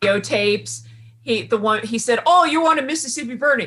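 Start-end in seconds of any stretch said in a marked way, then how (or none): 2.2-3.7 horrible put-on Irish accent, pitched up. Quoting a character from a film flashback: horrible Irish accent. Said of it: "And that was horrible Irish accent".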